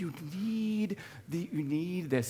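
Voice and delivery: slow, soft fairy voice.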